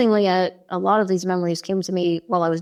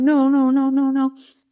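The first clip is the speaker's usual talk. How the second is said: mock sobbing, higher pitch, slower; 5 semitones higher than usual. Recounting an encounter with beings, imitating crying refusal. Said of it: "I'm like crying".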